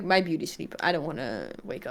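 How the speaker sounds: put-on dog character voice. Describing the dog going back to sleep after medicine: voicing the dog. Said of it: "he's like".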